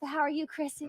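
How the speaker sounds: put-on Southern accent, Virginia style. Greeting the others and telling about breakfast ice cream: put-on southern accent. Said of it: "I know I'm talking like this".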